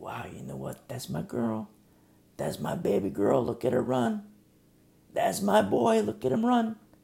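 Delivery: doting, proud voice, high-pitched and rough. Acting out a parent at a sports event watching their child: imitating a proud parent. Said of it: "And he's so proud".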